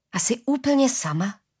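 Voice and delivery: sympathetic, worried, caring tone. A man answering a woman's bitter remark, asking with concern. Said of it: "Ptal se starostlivě Sknar".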